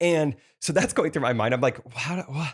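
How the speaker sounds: ordinary talk, nothing marked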